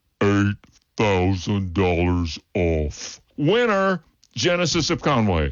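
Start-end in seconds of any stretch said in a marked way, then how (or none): 0.2-3.2 very slow, slowed-down slow-motion delivery. A car dealership ad announcer replays the previous line: slow-motion replay. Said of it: "Let's hear it again in slow motion".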